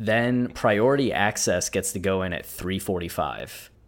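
ordinary delivery

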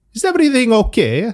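put-on very high-pitched, strong, heavy Neapolitan Italian accent. Retelling what Gianluca asked the speaker, imitating Gianluca's Italian accent. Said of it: "He's Italian, right? He's from Naples".

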